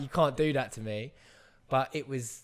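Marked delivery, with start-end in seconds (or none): none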